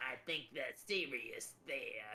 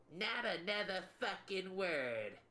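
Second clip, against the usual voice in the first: high, shrill screeching, shrieking voice; 8 semitones higher, 4 dB louder than usual. Game master voicing a voice from the shadows cutting someone off, screeching voice. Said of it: "you hear a screeching voice say".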